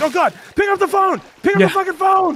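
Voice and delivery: frantic, desperate, very high, loud begging. Retelling a call to a friend when copies sold: imitating own frantic plea. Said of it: "I was like".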